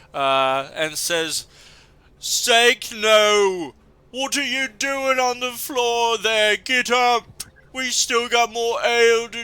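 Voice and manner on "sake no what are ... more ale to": angry yelling, higher-pitched and louder. Voicing a fighter who sees his friend die: Boris shouting in anger. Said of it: "Boris shouts as he sees his friend here die".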